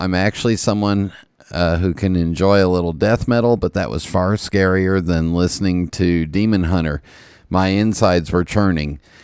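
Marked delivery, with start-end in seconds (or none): none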